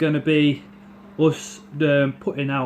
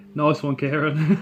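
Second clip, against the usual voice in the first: plain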